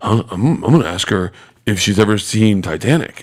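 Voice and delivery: utterly earnest, dead-serious acted deadpan, no joking at all. Retelling what a man said when asked his interview question: imitating Aaron dead serious. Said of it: "dead fucking serious".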